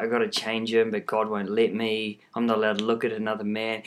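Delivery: ordinary delivery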